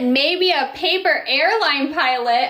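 plain

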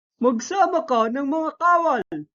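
high-pitched, furious, enraged voice. An enraged chief orders a warrior to gather soldiers, an enraged command. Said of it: "utos ng dato".

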